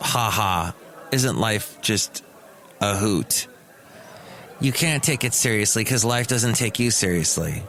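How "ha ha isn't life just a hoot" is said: low, slow, facetious, sarcastic tone. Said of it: "with a tint of".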